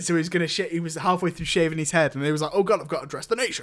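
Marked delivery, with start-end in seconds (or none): 2.5-3.6 startled, put-on British voice. Joking that the prime minister was mid-haircut: Boris Johnson impression. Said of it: "That was my Boris Johnson impression".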